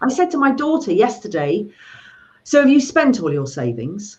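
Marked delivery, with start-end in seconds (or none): none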